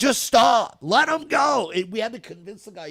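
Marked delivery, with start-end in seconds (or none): 0.0-1.7 very loud, slow, drawn-out pleading begging scream. Recounting a shootout on I-5, the speaker re-enacts screaming at the driver. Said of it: "And I'm screaming".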